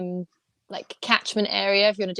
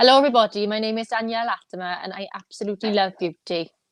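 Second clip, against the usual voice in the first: fairly convincing put-on Welsh accent. Asked to try a welsh impersonation, she introduces herself in a welsh accent. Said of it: "really good Welsh accent".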